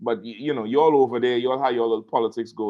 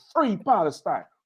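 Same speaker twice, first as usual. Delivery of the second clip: high-pitched yelling of a slogan. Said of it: "And just start yelling".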